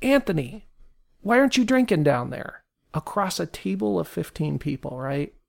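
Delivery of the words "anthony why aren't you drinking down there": put-on hearty shout, pitched higher. Retelling a business dinner where a guy at the table's far end: imitating a man yelling. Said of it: "this guy yells".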